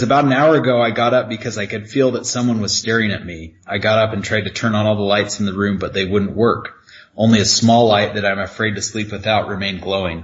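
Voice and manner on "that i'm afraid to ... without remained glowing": ordinary talk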